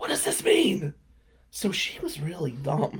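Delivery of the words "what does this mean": high, breathy whisper. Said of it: "she keeps whispering in my ear".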